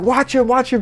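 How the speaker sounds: put-on very high, frantic, urgent scream. Retelling a man reacting after someone bumped into a leg: retelling a scream. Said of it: "he's like screaming".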